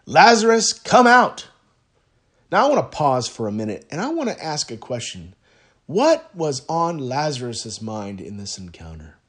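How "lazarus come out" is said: very high, very loud commanding call. Speaker retells the story, quoting him calling Lazarus to come out, in a loud voice. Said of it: "he said in that loud voice".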